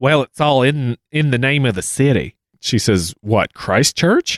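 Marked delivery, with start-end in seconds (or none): 0.0-2.4 put-on southern woman's accent, much higher. Retelling a woman's claims in a conversation, in a southern woman's voice. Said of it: "I'm going to do this in a southern woman's voice".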